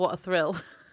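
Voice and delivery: put-on sarcastic tone. Retelling a line from the episode, imitating a sarcastic remark. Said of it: "Dean sarcastically says".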